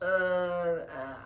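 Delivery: imitated drunken stammer. Retelling being asked how much they drank: imitating own drunk stammer. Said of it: "And this is me. I'm like".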